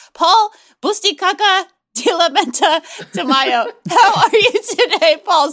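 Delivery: laughing through the words. Podcast host introduces the producer and co-host: laughing through the intro. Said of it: "I couldn't get through that without laughing".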